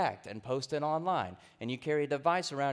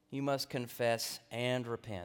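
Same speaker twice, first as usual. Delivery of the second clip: "and" stressed, hardest word in the line; 3 semitones lower than usual. Giving the third point of a talk, stress on the word and. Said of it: "The emphasis is on the word "and."".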